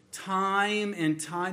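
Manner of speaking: "time and time" slow and drawn out. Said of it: "read it slowly".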